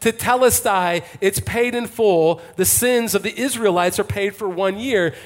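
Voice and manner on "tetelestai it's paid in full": normal talking voice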